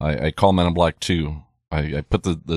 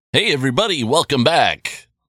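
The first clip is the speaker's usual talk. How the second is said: radio announcer voice; 9 semitones higher, 3 dB louder than usual. Welcoming everybody back, the speaker puts on a radio announcer voice. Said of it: "radio voice".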